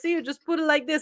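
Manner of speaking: put-on Italian accent. Retelling a grandpa's words from a YouTube reel: imitating an Italian accent. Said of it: "he sounded Italian to me".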